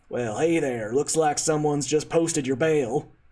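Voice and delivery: put-on dwarf character voice with a Texan accent. A game master voices a dwarf addressing a jailed player character, with a Texan accent. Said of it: "this one speaks with a Texan accent".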